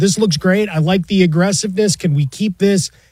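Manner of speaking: plain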